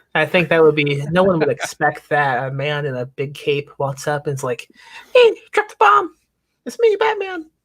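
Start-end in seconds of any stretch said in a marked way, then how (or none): 5.2-7.5 very high, loud, squeaky voice. Imagining how Batman should sound when he walks up, squeaky Batman voice. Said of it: "Batman should have like a like a squeaky voice".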